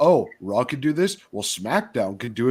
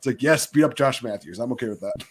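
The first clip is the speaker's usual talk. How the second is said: normal talking voice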